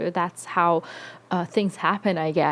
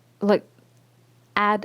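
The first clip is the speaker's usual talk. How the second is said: normal talking voice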